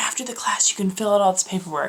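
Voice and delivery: mock whispering. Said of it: "And she's whispering".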